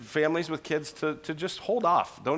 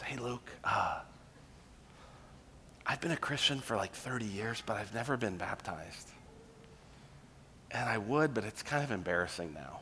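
very soft, quiet, hushed, under the breath; 6 semitones lower, 10 dB quieter than usual. Quoting what many people have told you in conversation, imitating someone's quiet voice. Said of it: "like usually kind of in a quiet voice".

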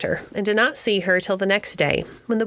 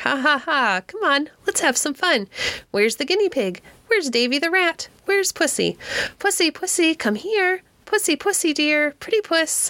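put-on distinct, shrill, high, clear old-woman parrot screech; 8 semitones higher than usual. Narrating a story, voicing Bella the parrot screaming to the boys; shrill, distinct voice. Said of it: "Her voice was shrill and distinct".

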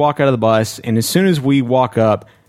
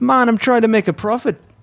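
faked, very high-pitched Irish lilt; 10 semitones higher than usual. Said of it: "And then he's Irish".

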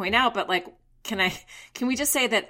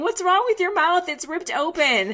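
put-on sloppy, high drunken crying through words; 9 semitones higher, 4 dB louder than usual. Retelling a scene, quoting a drunk woman talking to her friend, imitating drunken crying. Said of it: "Hari starts crying more and saying".

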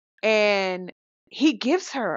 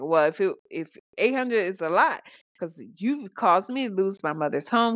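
ordinary talk, nothing marked

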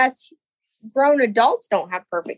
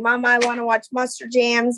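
normal talking voice

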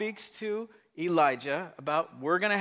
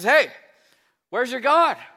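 put-on loud, high, scoffing, goading taunt; 6 semitones higher than usual. Retelling a Bible story, acting out a character's taunt: mock taunting. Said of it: "he's just taunting them".

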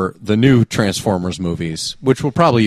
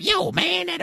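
very high robot voice; 6 dB quieter than usual. Complaining about two stereotypical movie robots: Skids and Mudflap impression. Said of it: "you don't need two robots going like".

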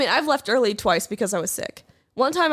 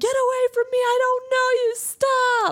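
put-on very high, slow, drawn-out panicked child's shout; 14 semitones higher than usual. Retelling what a kid was taught to yell at kidnappers: imitating a kid yelling. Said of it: "taught to yell at a potential kidnapper".

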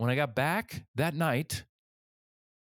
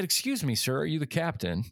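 ordinary delivery

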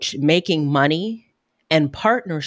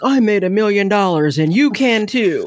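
salesy, hype infomercial announcer voice; 4 semitones higher, 3 dB louder than usual. Asked what comes to mind, the speaker mocks it in an announcer voice. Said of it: "like the announcer voice".

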